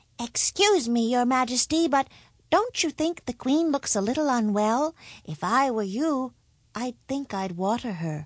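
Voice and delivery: hesitant, bashful, timid voice. The cobbler's youngest son speaks up to the king, timid. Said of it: "said timidly".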